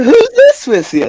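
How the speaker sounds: very high-pitched character voice. Voicing Charla, who spots Drizzle in the room: Charla's voice. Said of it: "and Charla says".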